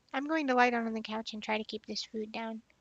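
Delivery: normal talking voice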